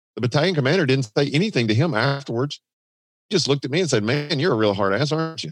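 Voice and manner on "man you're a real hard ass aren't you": heavy, cutting, very sarcastic jab. Retelling what the battalion commander said to them afterwards, retelling a very sarcastic remark. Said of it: "he said it very sarcastically".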